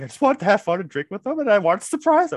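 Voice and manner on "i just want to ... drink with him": mock pouty, sulky mumbling. Recounting someone's reply, imitating a pouty mumble. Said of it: "kind of pouty".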